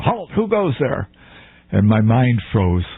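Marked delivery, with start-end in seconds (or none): 0.0-1.1 very high-pitched yelled shout. Retelling a night challenge at a roadside ambush: imitating a guard yelling. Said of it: "a guy yells out".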